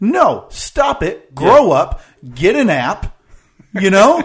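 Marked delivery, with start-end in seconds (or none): 0.0-2.0 riled-up yelling, higher and louder. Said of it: "You're yelling at the people".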